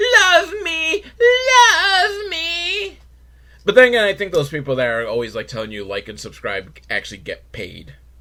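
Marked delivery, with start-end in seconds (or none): 0.0-3.0 mock tearful whimper, very high, crying. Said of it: "be here begging".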